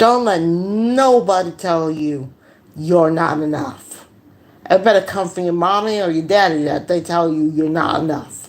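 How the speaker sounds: ordinary talk, nothing marked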